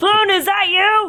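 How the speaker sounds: very high, loud calling shout. Seeing a man come out of a room, the character is shouting. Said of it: "And I start shouting at him".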